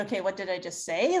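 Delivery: ordinary talk, nothing marked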